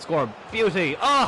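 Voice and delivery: high-pitched, loud, excited yelling.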